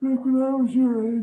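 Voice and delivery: put-on, very high elderly man voice. Telling listeners about being their age, in a put-on old man voice. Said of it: "That's my old man voice".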